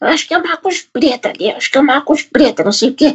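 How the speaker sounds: very high-pitched put-on elderly woman voice. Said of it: "gostei da voz de velha".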